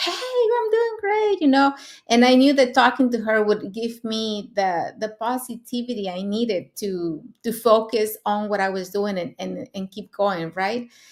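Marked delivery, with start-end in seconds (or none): 0.0-1.4 very high, bubbly, full-of-energy chirp. Retelling how her accountability partner always answered messages, imitating a hyper, energetic friend. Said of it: "she was always like hyper and full of energy".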